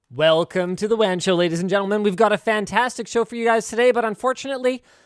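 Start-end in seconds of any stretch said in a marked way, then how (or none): 0.2-4.0 bright, upbeat, cheerful show host tone. Host opening the WAN Show for viewers, in an upbeat host tone. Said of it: "as long as I can maintain that upbeat kind of tone of voice".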